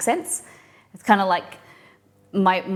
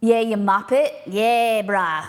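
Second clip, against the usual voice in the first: full-on put-on broad Australian accent; 2 semitones higher than usual. Describing how the speaker drifts between accents, slipping into another accent. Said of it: "I'd have to be like this and and talk".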